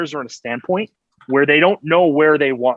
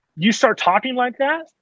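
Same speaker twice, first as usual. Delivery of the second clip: ordinary delivery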